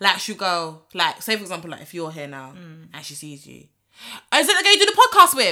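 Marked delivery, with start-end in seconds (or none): 4.3-5.5 very high, very loud shouted call-out. Imitating a coworker asking about someone out loud: imitating someone shouting. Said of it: "so why the fuck you shouting it?".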